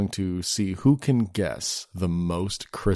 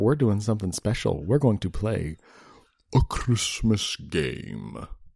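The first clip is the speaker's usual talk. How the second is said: menacing knight-like voice. Host announcing the special Christmas episode game to a co-host, like the Green Knight. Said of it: "you said it like the Green Knight".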